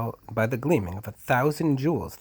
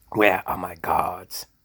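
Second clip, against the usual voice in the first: low, croaky voice croaked out from the throat; 4 semitones lower, 4 dB louder than usual. The Duke speaks after the Galax declares the task done, croaking. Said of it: "He croaked".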